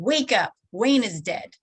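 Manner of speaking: mock-condescending yelling. Retelling what she said while sitting on the speaker's bed; mock-condescending yelling. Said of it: "in a very condescending tone".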